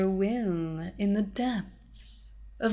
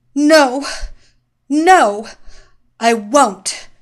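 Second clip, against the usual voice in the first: very loud, very slow, drawn-out shout; 4 semitones higher, 13 dB louder than usual. A woman fighting off evil commands, shouting. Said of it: "Zinda shouted".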